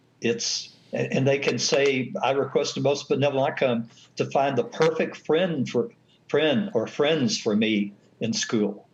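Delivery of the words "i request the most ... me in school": normal talking voice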